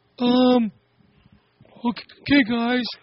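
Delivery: high, hesitant, scared, nervous squeaky voice.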